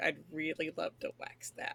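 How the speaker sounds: slow, whispered mutter under the breath. Voicing Calandra as she reacts to a hairy man: muttering under breath. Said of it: "Calandra just mutters under her breath".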